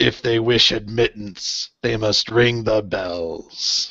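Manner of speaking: low, gravelly character voice. The speaker voices a character answering the group, in a gravelly voice. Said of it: "the gravelly voiced one says".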